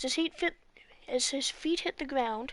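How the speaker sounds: ordinary delivery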